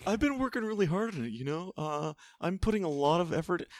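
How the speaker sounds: affected, self-important tone. Doing Sean's voice during group banter: put-on pretentious Sean voice. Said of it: "You sound really pretentious".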